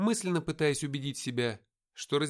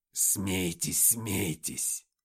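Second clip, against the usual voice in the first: very low, hissing, demonic demon voice; 7 semitones lower than usual. Reading the story as the mocked demon answers the laughing men: hissing demon. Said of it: "прошипел демон".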